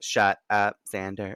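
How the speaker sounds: put-on robotic-sounding voice. Recapping a TV episode, quoting her line to a friend, robotic Buffy imitation. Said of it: "The way she said it kind of sound like very robotic".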